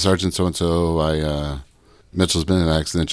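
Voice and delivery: ordinary talk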